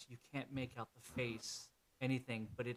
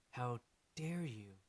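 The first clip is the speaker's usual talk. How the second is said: much more, noticeably feminine voice. Voicing a figure confronting the doctor: much more feminine voice. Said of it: "the voice becomes much more feminine".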